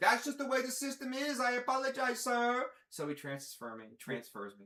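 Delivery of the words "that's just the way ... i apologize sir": put-on Indian accent, high and loud. Retelling a phone call, imitating the call-center worker from india. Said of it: "Is your India guy from China?".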